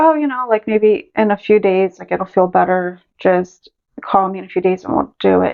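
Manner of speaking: normal talking voice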